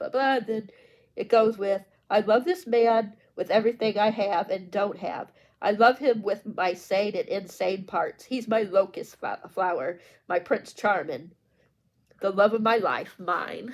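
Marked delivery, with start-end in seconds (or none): none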